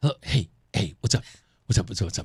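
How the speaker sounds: whispering. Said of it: "I'm whispering because Roseanne is already asleep".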